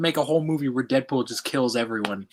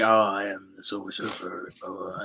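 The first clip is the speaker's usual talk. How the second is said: dull, uncharismatic drone, low, flat and level; 5 semitones lower, 6 dB quieter than usual. Showing how flat the Silver Surfer sounds: monotone Silver Surfer voice. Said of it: "He's very monotone".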